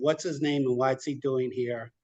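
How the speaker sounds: ordinary talk, nothing marked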